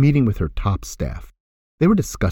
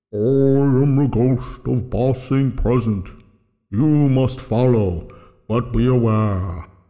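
resonant, sonorous, drawn-out ghostly voice. A ghost announces itself to eb, sonorous voice. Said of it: "announced itself with a sonorous voice".

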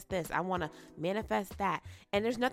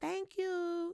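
put-on tiny, very high two-year-old toddler voice; 13 semitones higher, 4 dB quieter than usual. A speaker retells the 2-year-old nephew's answer: little 2-year-old voice. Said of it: "in his little 2-year-old voice".

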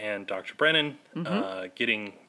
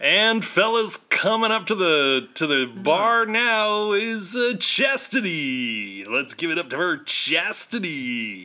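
put-on club DJ announcer voice, higher pitched; 8 semitones higher, 7 dB louder than usual. Joking with another speaker about kinds of DJs, doing a strip club DJ voice. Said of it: "that sounds more like a strip club DJ".

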